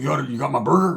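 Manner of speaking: big, swaggering, macho tough-guy voice. Retelling how a biker greeted him: Macho Man-ish voice. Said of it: "more Macho Man-ish".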